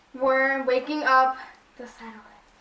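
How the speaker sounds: ordinary talk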